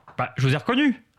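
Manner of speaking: ordinary talk, nothing marked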